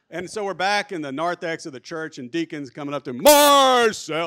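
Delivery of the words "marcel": very loud, high-pitched, booming yell. Retelling a deacon greeting a man in the church narthex: imitating a very loud deacon. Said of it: "I'm even breaking the microphone right now".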